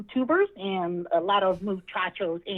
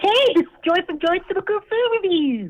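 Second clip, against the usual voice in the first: much higher pitch and louder; 11 semitones higher, 8 dB louder than usual. A caller on the air introducing herself, in a high-pitched voice. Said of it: "You sound like a little bit more high pitched".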